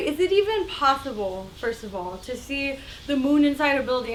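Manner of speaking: ordinary delivery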